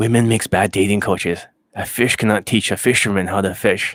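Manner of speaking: put-on female character voice. Doing an impression of a dating coach named Sarah: RSD Sarah impression. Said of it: "That's my impression of her".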